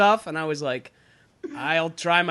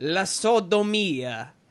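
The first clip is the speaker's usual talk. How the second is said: put-on old Italian man voice. Saying a word in italian as a joke: old italian man voice. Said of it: "I can only say it like an old Italian man".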